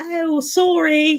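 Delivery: put-on British accent. Joking around with friends on a Twitch stream, put-on British accent. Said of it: "Like my British impression".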